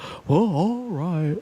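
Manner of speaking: put-on animated cartoon dad character voice. Imitating a voice actor agreeing to return: Hank Hill voice. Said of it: "Hank Hill voice".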